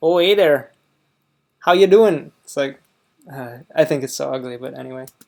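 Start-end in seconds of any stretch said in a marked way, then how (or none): 0.0-2.3 loud put-on Northern Midwest Minnesota accent. Speaker demonstrates how people from their home region talk, Minnesota accent. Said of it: "Minnesota kind of sounds like that".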